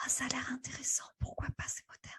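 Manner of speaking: tiny, hushed, whispered voice. Voicing the listener's inner voice back to her, in a small little voice. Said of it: "je te la fais, la petite voix qui dit".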